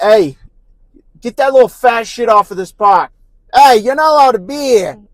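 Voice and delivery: put-on New York accent, very high. Acting out a security guard chasing families off a park: put-on new york accent. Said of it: "Why are you New Yorkin?".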